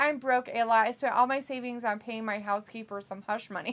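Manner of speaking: ordinary delivery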